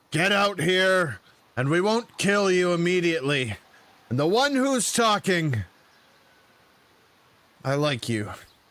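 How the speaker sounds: menacing, threatening bandit voice. Voicing bandits who order the players out: threatening bandit voice. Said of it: "and they're like".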